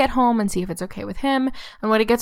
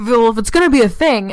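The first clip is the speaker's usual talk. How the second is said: imitated slightly raised voice, louder; 6 dB louder than usual. Retelling how Guy snaps at Rosemary: imitating Guy slightly raising his voice. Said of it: "kind of raises his voice at her a little bit".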